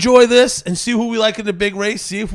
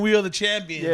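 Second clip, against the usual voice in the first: ordinary delivery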